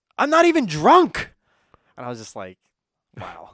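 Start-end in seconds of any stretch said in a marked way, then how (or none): 0.2-1.3 play-acted shrill, very high, loud shout. Speaker retells what a passing lady yelled at them, retelling a stranger's yell. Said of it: "just looks at us and just yells".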